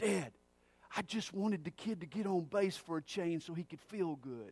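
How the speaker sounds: hushed, soft stage whisper. A father retells what was half-whispered to him from the dugout: retelling a half-whisper. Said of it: "in a whisper where only I could hear him".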